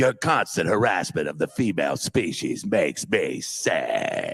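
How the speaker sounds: adenoidal voice pitched low. Quoting a line voiced for Jake the dog: Diedrich Bader impression. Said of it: "that's my Diedrich Bader impression".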